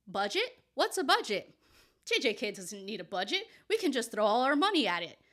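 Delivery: mock, full-blast sarcasm in swooping sing-song. Imitating Mappa spending on the anime: sarcastic imitation of Mappa. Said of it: "my sarcasm's on full blast today".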